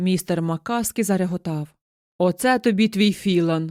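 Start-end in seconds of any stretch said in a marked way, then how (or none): 2.2-3.7 mocking, jeering, exclaimed. The husband answers his wife's news, exclaiming mockingly. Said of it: "насмішкувато вигукнув він".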